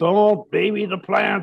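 put-on heavy European accent. Quoting an older childhood friend's advice, in a thick european accent. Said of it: "He had a very thick European accent".

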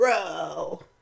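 low-pitched, drawling bro voice. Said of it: "Like that".

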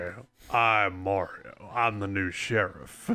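put-on cowboy sheriff voice. Joking that a cowboy outfit gives a new voice: Mario cowboy sheriff voice. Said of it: "he has a different voice for that outfit".

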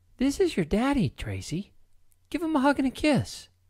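voice lifted right up, high-pitched. Narrator reads April introducing her child to the child's father, high-pitched voice. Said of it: "April said in a high-pitched voice".

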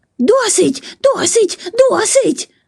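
screeching cry, pitched very high and shrill. Narrator reads the boy fleeing the overflowing porridge pot, screeching. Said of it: "верещав він".

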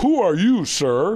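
high, loud, indignant tone.

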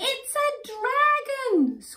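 very high guilty shriek, screaming. The robber bumps into a dragon costume around a corner; screamed in a guilty voice. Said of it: "screamed the robber in a guilty voice".

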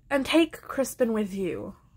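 plain

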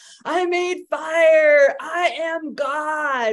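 very slow, high, loud ecstatic scream, God stretched out. Retelling a scene of a man dancing around a bonfire, imitating a scream. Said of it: "screaming like".

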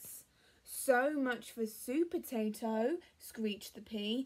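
plain reading voice

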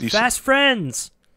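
loud shouting. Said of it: "I shout".

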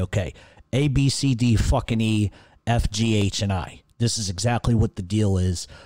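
ordinary delivery

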